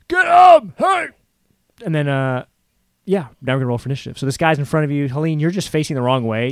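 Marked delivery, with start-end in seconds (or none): 0.1-1.0 very high, very loud yell. As game master, voicing another guy calling to a fallen man, yelling out. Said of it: "this other guy kind of yells out".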